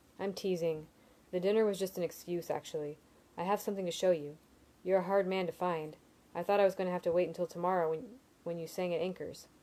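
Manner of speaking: plain reading voice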